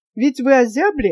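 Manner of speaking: plain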